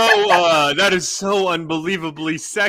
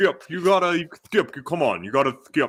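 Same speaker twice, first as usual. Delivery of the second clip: put-on deep drawling voice, quieter; 4 dB quieter than usual. Imitating a commentator addressing Skip: Sean Connery mixed with Shannon Sharpe. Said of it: "you sounded like Sean Connery".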